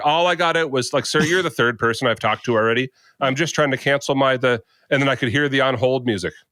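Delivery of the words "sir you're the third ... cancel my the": ordinary delivery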